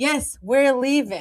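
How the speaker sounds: play-acted, very angry voice. Retelling answering a librarian while carrying a toddler to the door, retelling an angry reply. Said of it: "I said it in a very angry way".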